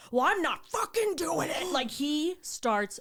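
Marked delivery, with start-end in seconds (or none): 0.1-1.7 furious, angry, raised, pitched-up yelling. Retelling a plane argument, imitating dad yelling at the flight attendant. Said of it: "You yelling is not helping".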